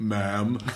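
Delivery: unexpectedly very deep, super low voice. Retelling a movie scene where a voice says ma'am, super deep voice. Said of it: "like a super deep voice".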